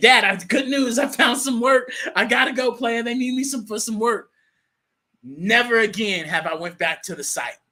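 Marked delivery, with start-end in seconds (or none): 0.0-4.3 high, loud, excited, thrilled rush of words. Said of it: "I got on the phone with my father and I said".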